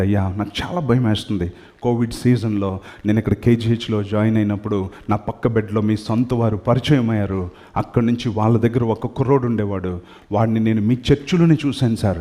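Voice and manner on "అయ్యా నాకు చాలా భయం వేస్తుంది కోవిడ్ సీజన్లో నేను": plain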